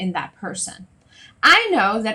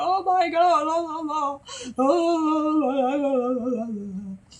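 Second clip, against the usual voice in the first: very slow wailing sob, oh stretched out; 7 semitones higher, 3 dB quieter than usual. Imitating a client crying after a huge breakthrough: imitating someone crying and bawling. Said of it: "they're crying and bawling and they're like".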